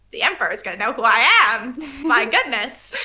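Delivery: weird, graggly, terrible, self-important little man voice. A game master voices Ham Hamney for the table, Ham Hamney's graggly little-man voice. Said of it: "weird kind of like graggly little terrible man".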